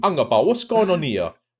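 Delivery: loud, high, put-on fake Spanish accent. Imagining a future reaction to this old video, in a put-on Spanish accent. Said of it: "let me do a Spanish accent".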